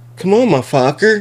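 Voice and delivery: put-on young boy voice.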